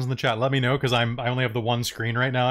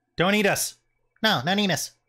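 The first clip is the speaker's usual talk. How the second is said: frightened, high, squeaky rat voice; 7 semitones higher than usual. Rats plead with a green creature not to eat them: squeaky rat voice. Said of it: "squeaking at the rats".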